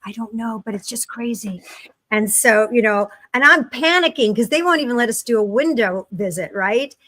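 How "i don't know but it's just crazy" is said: put-on whisper, quieter. Retelling what a care aide quietly said: imitating someone whispering. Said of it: "the C N A is kind of whispering".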